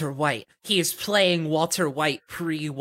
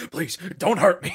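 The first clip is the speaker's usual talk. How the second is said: mock panicked, pleading voice; 2 semitones higher than usual. Retelling how a man pleads in a scene, mock panicking. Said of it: "He's he's like panicking".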